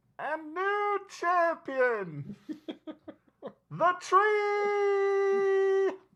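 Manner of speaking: very high, loud, mechanical gnome announcer voice. The game master voices the gnome heard through a mechanical microphone-like device: gnome voice through a microphone. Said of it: "the voice of the gnome through that mechanical microphone-ish".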